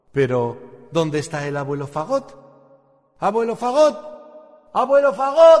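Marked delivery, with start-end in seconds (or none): 3.2-5.6 very high, loud shout, calling out. A young instrument character calling out for the napping grandfather bassoon, shouting. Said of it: "¿Por qué gritas tanto".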